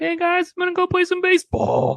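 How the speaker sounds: very high, loud, squeaky, bouncy voice. Speaker recalling a Family Guy scene: kid Peter from Family Guy voice. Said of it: "Someone does a high-pitched voice".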